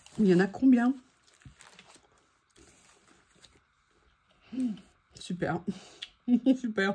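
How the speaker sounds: speaking with mouth full of food. Having just put a whole piece in the mouth, the speaker keeps talking: talking with mouth full. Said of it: "j'ai la bouche pleine".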